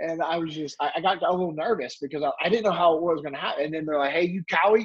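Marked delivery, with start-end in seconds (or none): 4.1-4.9 put-on hostile, confrontational, aggressive and challenging tone. Retelling how a big stranger confronted a friend: imitating an aggressive question. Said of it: "super aggressive".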